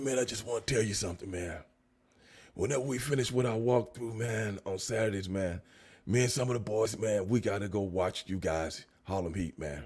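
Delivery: very soft, low, raspy, under-the-breath delivery. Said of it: "that kind of raspy voice".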